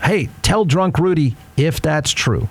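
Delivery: ordinary delivery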